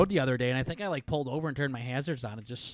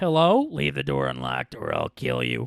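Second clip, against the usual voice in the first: mysterious put-on voice. Acting out someone knocking on a door, in a mystery voice. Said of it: "mystery voice".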